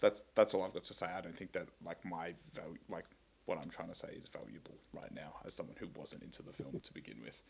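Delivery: downcast, dejected, very soft and very quiet delivery. Giving a final opinion on a film to the others, sounding dejected. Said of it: "You sound so dejected about it too".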